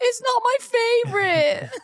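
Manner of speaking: play-acted, very high, slow, tearful little-kid wail. Retelling a child's reaction after getting his shots: imitating a crying child. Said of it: "he was crying and was like".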